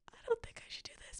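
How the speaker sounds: high, breathless whisper, as if to oneself.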